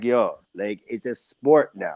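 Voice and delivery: put-on slow, laid-back, everyday rude boy manner. Saying a line the way it would be said: like an everyday rude boy. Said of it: "I'm saying it like an everyday rude boy".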